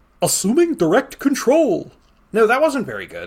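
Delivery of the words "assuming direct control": goofy, silly, pitched-up cartoon character voice. Asked to try it, doing a Goofy voice on a line. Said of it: "Does anybody want to hear me try to do a Goofy impression of this?".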